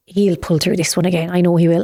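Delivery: normal talking voice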